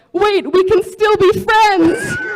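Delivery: shrill, very loud, high, frantic desperate pleading yell. Retelling a friend's reaction after spitting water on people: imitating a desperate yell. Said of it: "in the most desperate voice you've ever heard".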